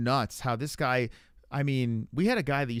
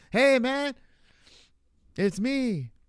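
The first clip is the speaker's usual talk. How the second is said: very slow, very high put-on Mexican accent; 12 semitones higher, 4 dB louder than usual. Acting out the suspected disguised caller, Dominic Reyes, in a put-on Mexican accent. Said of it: "putting on like a Mexican accent".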